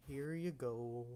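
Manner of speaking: dry, deadpan cartoon-donkey voice. Voicing a bartender serving drinks in a tavern: Eeyore voice. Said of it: "he sounds kinda like, um, Eeyore from Winnie the Pooh".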